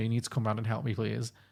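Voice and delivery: sobbing tearful voice. Retelling a distressed woman's phone call asking for help: imitating a sobbing plea. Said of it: "sobbing woman".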